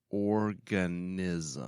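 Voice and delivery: deliberate, unhurried, slow, drawn-out single word. Asking someone to define a word, saying it slowly. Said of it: "I'm going to say it slowly".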